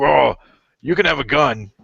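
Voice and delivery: slow, gruff voice, pushed hard. Playing a friend during talk about open carry: imitating Rich's gruff voice. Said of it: "I'm pushing my voice 'cause he sounds kinda gruff".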